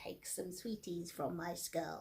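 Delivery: put-on witch voice. Handing out sweets from a skull bowl to trick-or-treaters: witch voice. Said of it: "I sort of put a witch's voice on and say".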